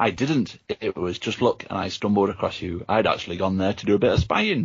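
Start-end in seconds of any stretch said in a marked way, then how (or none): none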